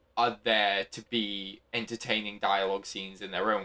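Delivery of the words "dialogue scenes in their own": ordinary talk, nothing marked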